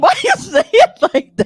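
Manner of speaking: high, loud, laughing disbelief.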